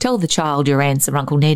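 ordinary delivery

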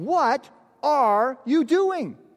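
play-acted, very high, stretched-out, drawn-out yelled scream. Retelling how officials chased the boys: imitating officials screaming. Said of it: "officials who chased us and started screaming at us".

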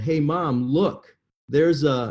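put-on little kid's loud yell. Retelling a childhood moment in a grocery store: retelling a childhood yell. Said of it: "and yelled".

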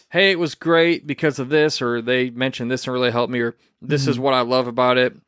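plain

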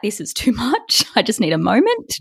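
tearful, weepy crying voice with swooping pitch. Retelling crying while working at a wedding venue: imitating own crying voice. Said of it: "'cause I'm crying so much".

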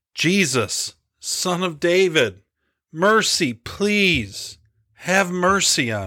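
high, slow yell through choking tears. A man yells after the crowd to Jesus, shouting choked with tears. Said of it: "fighting tears, and emotion choked his voice".

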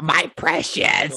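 clumsy, over-the-top, high squeaky creature voice. Taking turns doing movie character voices, do a bad Gollum voice. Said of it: "So bad".

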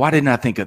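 plain

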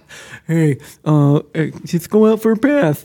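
puppet-like cartoonish voice. Imitating a quarterback calling a play in the huddle: imitating Patrick Mahomes's Muppet-like voice. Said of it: "he sounds like a Muppet".

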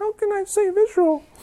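meek, very high, small, soft voice. Retelling Gideon's reply to God in verse 14, meek little Gideon voice. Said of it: "I can almost imagine like a meek little voice".

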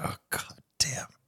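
whispered, breathy, grumpy grumbling mutter. Retelling how Dad reacted to repeated thanks: imitating grumpy Dad. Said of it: "he was grumpy all day".

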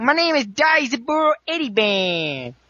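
exaggerated New York accent. Describing an anime dub, speaker quotes Daisaburo's introduction in a stereotypical New Yorker accent. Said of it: "ridiculously stereotypical, hey, New Yorker kind of accent".

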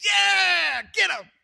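very high, loud crowd cheer, yeah stretched. Retelling a crowd reacting to a prophet: imitating a cheering crowd. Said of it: "And everybody cheers".

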